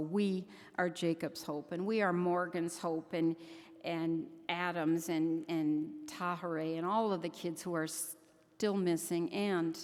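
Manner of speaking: normal talking voice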